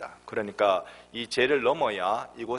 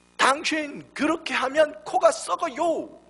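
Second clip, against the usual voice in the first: put-on very high, loud Korean spoken with a foreign accent; 5 dB louder than usual. Speaker retells what a foreign missionary woman said, imitating a foreigner's Korean. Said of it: "발음은 이렇게 했는지 모르지만 단어는 정확합니다".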